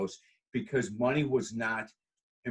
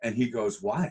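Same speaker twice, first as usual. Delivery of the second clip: ordinary talk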